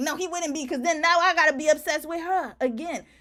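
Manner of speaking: put-on indignant, upset tone. Reacting to a clip, imitating how a woman in it got upset: imitating someone upset. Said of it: "Notice how she got upset. Like".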